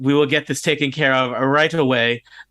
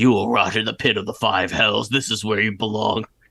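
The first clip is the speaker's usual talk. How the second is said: deep, guttural, snapping beast-like dog voice; 4 semitones lower than usual. Voicing a dog that snaps and speaks back to you, guttural dog voice. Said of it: "the dog kind of speaks back to you in a guttural voice".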